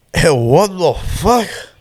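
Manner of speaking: put-on high, drunken, heavy thick Salvadorian accent. Retelling a man coming up close behind, imitating his drunken heavy Salvadorian accent. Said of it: "in the most drunken way possible".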